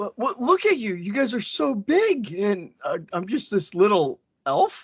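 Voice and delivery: scared, nervous voice. A half-elf character is asked why he ran away, scared. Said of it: "He's scared".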